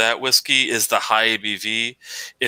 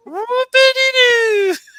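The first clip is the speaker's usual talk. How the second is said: really high-pitched falsetto, much higher, louder; 7 dB louder than usual. Showing how the phrase must be said: really high-pitched falsetto. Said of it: "say it really high pitched with falsetto".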